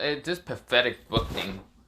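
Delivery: ordinary delivery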